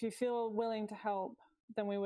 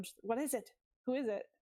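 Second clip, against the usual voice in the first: wary, cautious, guarded tone. Role-playing hearing a noise from under the bed, asking what it is, low hushed voice. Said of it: "I'm trying to keep my voice low".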